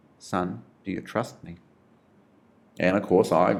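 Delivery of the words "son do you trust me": very gentle, quiet, gentlest possible delivery. Recounting the Lord asking him a third time, retelling a gentle, quiet ask. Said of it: "very gently, quietly".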